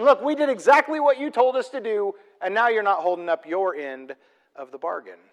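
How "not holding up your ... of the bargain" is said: ordinary talk, nothing marked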